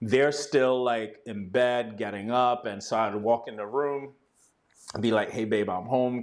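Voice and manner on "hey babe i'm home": put-on whisper. Retelling coming home while others are still getting up: retelling a whisper. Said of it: "kinda whisper it".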